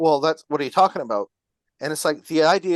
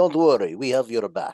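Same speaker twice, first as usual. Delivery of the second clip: low, put-on Russian accent in English; 4 semitones lower than usual. Speaker offers reassurance to the other speaker, doing it in a Russian accent. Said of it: "I'll give it to you with the, the Russian accent".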